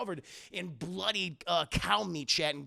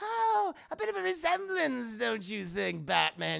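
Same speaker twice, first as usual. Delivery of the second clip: high, pitched-up, teasing villain voice; 6 semitones higher than usual. Retelling a scene where the Joker greets Batman at an aquarium: Joker voice. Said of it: "He's like".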